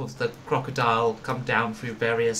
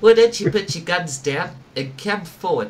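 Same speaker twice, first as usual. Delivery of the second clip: raised, high put-on South African accent; 6 semitones higher, 7 dB louder than usual. Voicing a character ordering the group to put guns down: South African accent. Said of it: "I'm definitely South African".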